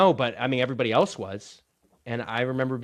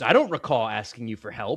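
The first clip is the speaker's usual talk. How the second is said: put-on defensive manner. Retelling a character's reply from a movie scene: imitating a defensive reply. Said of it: "really defensively goes".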